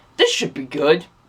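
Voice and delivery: put-on sarcastic tone. Retelling seeing a family come into the theater, a sarcastic remark. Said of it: "and sarcastically".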